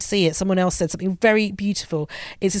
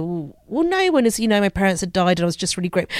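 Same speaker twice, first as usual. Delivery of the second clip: plain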